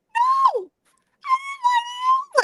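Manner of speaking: very high, slow, drawn-out innocent voice. Retelling catching her lying on the phone, the speaker imitates her high-voiced denial. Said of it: "her voice gets so high when she's lying".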